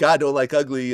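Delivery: ordinary talk, nothing marked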